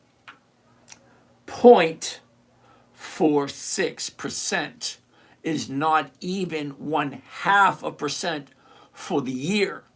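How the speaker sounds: deliberate, slow, halting, word-by-word delivery. Speaker repeats a yield figure to the listener, saying it again slower. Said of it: "I'm going to say it again slower".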